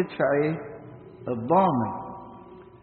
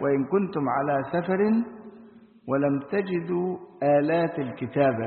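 ordinary delivery

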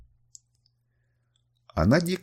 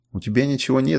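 plain reading voice

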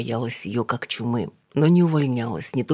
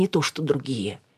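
ordinary delivery, nothing marked

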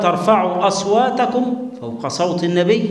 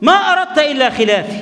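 acted-out, high, heated, argumentative quarrelling tone; 8 semitones higher, 3 dB louder than usual. Retelling Abu Bakr's reply to Umar, acting out a heated quarrel tone. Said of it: "هو كده بالنبرة دي، يعني كان حظت إيه، مشادة".

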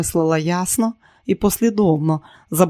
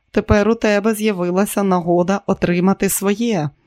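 plain

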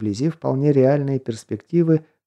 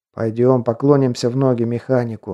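ordinary delivery

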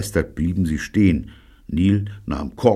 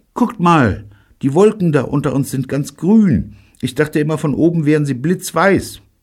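sudden loud, high exclamation; 9 semitones higher, 5 dB louder than usual. A passenger who has been looking down suddenly calls to the others, crying out. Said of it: "Plötzlich schrie [name]".

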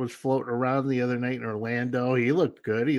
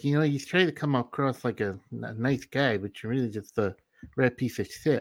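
put-on lisping boxer voice. Retelling what a boxer said to someone: Mike Tyson impression with a lisp. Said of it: "that was my Mike Tyson impression".

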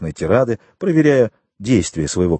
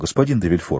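ordinary delivery, nothing marked

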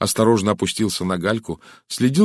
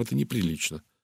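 usual speaking voice

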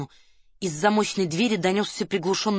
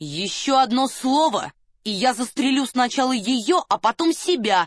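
stagy, dramatic, raised and drawn-out voice; 5 semitones higher than usual. A man speaking toward people behind a door, with a dramatically raised voice. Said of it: "Драматически повысил голос Девре".

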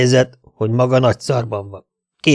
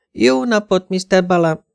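put-on voice, much higher pitch; 7 semitones higher than usual. Called in by the narrator, Brewster greets Mr. Balam in a very high-pitched voice. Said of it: "mondta nagyon magas hangon".

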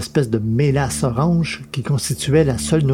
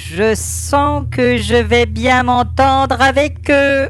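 disgusted tone, pitched very high; 11 semitones higher, 3 dB louder than usual. Tiremont speaks up in the story, disgusted. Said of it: "Lança Tiremont avec une moue dégoûtée".

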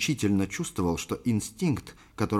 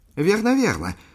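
very high, noisy, overjoyed, delighted cry; 11 semitones higher, 7 dB louder than usual. The host recognizes the captain as an old acquaintance, noisily delighted. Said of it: "шумно обрадовался".

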